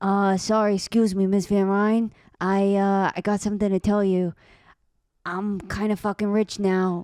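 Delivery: timid, shy, slow New York accent. Asked to try the character's voice, shy New York accent. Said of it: "Why don't you try it a little bit?".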